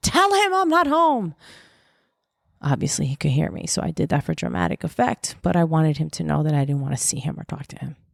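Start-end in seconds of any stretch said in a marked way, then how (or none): 0.0-1.3 put-on very high, shrill yell carrying across rooms. Recalling a boy at the front door, the speaker retells screaming from the kitchen. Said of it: "I'm screaming from the kitchen".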